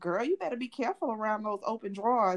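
heavily sarcastic mock delivery. Retelling her mom's reaction on the phone after a fall, imitating mom being sarcastic. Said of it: "it was filled with so much sarcasm".

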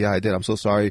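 put-on nervous freaking out. Recalling being asked about the broken ramp by someone just met, retelling nervous freaking out. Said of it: "I'm like freaking out".

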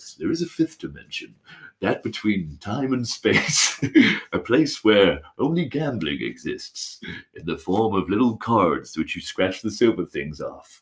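dramatic, mysterious narrator voice. Asked for an intro about a scratch-card winner: Twilight Zone narrator voice. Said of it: "Do it in a Twilight Zone voice".

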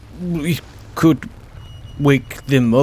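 timid fish creature voice. A narrator voices a fish creature that pauses a moment, timid fish creature voice. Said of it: "like just like timidly".

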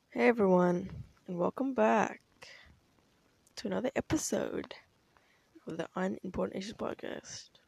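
flat, unenergetic, low-energy voice. Opening a podcast episode after a rough week, with low energy. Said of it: "I wish I said that with more energy".

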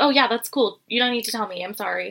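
put-on defensive voice. Retelling a reality show scene where a contestant answers: imitating a defensive reply. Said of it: "Demi gets kind of defensive".

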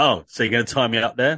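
full of swagger and cockiness. Imagining how another speaker asked the question: imitating a cocky tone. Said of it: "the cockiness and the, the, the, in your voice of going".

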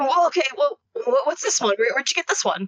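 eager, excited, keen, tripping over the words. Voicing a character rushing over to grab a vial: excited. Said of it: "excited by this vial".

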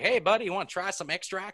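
toothless backwoods voice. Retelling a man at a Hot Sauce Expo offering a sample: toothless redneck voice. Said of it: "he's this toothless like redneck".

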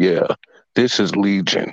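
put-on deep-voiced narrator voice. Imitating the dude narrating a show on Tubi: deep narrator voice. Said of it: "the dude narrating is got that deep voice, like".

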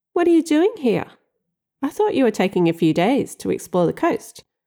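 sugary-sweet, honeyed tone. Hiding a toolbox, the narrator greets a surprise visitor in the sweetest voice. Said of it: "in my sweetest voice".

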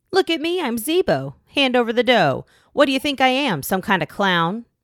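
proud, boastful, loud, jeering, mocking tone. Mocking a legend after two lame scare attempts, mocking proudly. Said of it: "he mocked proudly".

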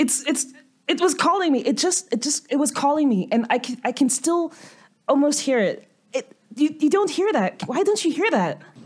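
panicked, hyperventilating, breathless, high, rushed ramble. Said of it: "I'm starting to hyperventilate".

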